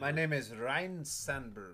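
fake Spanish-style accent.

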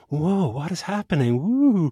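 play-acted, awestruck, curious wonder, high and drawn out. Describing her scene, the speaker acts out a woman's reaction, mock-curious. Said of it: "she's all curious and like".

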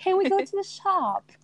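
attempted British accent, missing the mark. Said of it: "I'm doing I know".

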